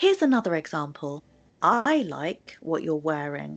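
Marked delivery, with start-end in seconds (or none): 1.6-3.6 heavy emphasis on the opening word I. Sentence stress lesson, example line with stress on the word I. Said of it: "I put the stress at the beginning on the word I".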